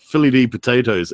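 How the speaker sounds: ordinary talk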